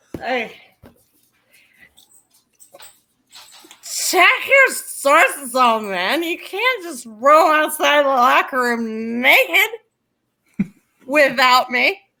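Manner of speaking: put-on sloppy, slurred, drunken voice. Reading a listener's comment aloud in a requested voice: put-on drunk accent. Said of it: "your accent is drunk".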